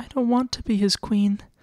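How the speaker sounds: tiny, small, thin voice, very high. Narrating a novel, voicing a frightened girl's line in a small, thin voice. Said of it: "in a small, thin voice".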